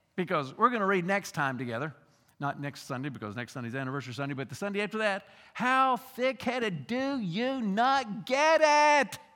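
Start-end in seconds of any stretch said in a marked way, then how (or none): 5.6-9.2 fed-up teacher voice, high, very slow, drawn out. Acting out the teacher speaking to his followers, mock-frustrated teacher voice. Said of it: "Can you hear the frustration in the teacher's voice?".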